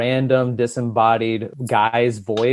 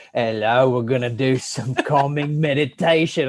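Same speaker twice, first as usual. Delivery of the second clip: harsh, put-on British narrator voice. Retelling a meditation audio, speaker imitates the british guy's voice: harsh british voice. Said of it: "this harsh British dude's voice".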